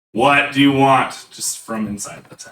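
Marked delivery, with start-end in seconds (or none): 0.1-1.2 loud, slow, drawn-out, gruff voice. Narrating a scene, a voice answers from inside a closed tent: gruff voice. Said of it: "and you hear a gruff voice".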